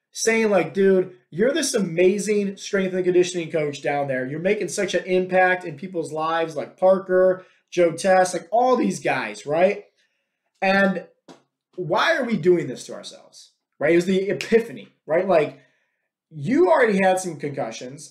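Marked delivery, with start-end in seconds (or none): none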